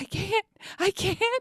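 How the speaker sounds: very high, drawn-out words through laughter. Retelling telling a friend to stop while both couldn't stop laughing: imitating laughing while talking. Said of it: "we just couldn't stop laughing".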